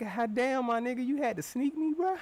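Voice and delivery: words spilling through laughter. Retelling getting up after being knocked out: retelling laughing while talking. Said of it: "I got up laughing like".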